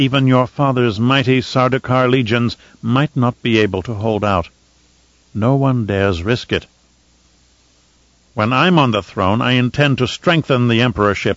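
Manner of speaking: ordinary delivery, nothing marked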